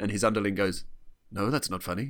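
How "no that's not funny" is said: ordinary talk, nothing marked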